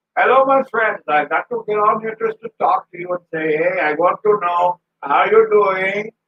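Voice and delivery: put-on friendly Indian accent. Speaker mimics how a man greets him at the office, imitating the man at the office. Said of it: "I could do the whole podcast like that".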